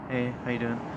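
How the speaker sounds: hushed, low-key, quiet, soft delivery. Describing greeting people not seen in a while: quiet voice. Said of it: "in a quiet voice".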